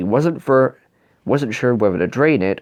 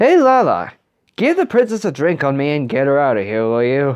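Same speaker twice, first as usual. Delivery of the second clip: pretend drunk voice, feigned drunken speech; 3 semitones higher than usual. Speaking to Lala about the princess, doing a fake drunk voice. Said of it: "keep doing the drunk voice".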